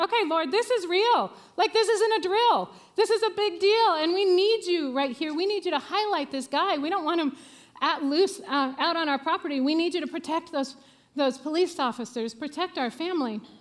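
mock earnest, desperate, pleading prayer-like tone. Retelling a prayer during a police search: retelling a desperate prayer. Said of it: "it was a pretty desperate prayer".

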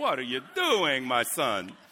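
Italian mama voice with put-on Italian accent. Imagining how a line would sound read aloud: Italian mom voice. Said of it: "like an Italian mom saying that".

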